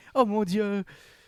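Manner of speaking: high, loud mock panic.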